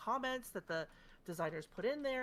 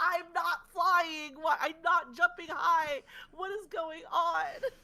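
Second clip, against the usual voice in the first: loud, slow yell, pitched up, each word drawn out; 8 semitones higher, 7 dB louder than usual. Retelling yelling at the screen during a raid: imitating own yelling. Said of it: "I'm yelling at the screen, going".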